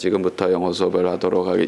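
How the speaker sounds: very low, flat, unchanging monotone drone. Demonstrating the monotonous tone for starting an English class: flat monotone. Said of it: "이거 거의 여러분들을 암흑의 세계로 이끌고 갈 수 있는 그 목소리 톤".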